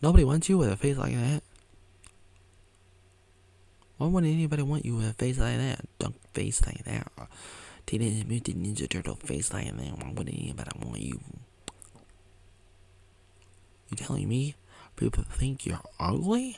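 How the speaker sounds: pointed, swooping, sing-song sarcastic tone. Doing a face bit for the viewer: mock sarcastic. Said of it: "pretending to be sarcastic".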